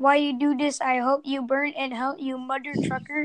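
ordinary talk

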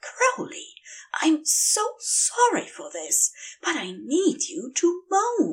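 breathy whisper, under the breath. Narrating an angel whispering a request while a visitor walks through the shop: whispered. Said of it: "Aziraphale whispered".

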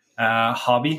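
ordinary talk, nothing marked

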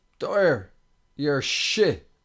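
very loud, shrill, top-of-the-lungs jeering. Retelling what someone in the crowd shouted: imitating a fan shouting. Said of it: "That's all he said at the top of his voice".

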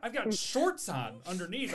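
high, loud, flustered delivery.

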